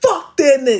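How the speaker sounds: hard, forceful, emphatic delivery. Leading listeners in the phrase for twenty twenty-five: said real hard.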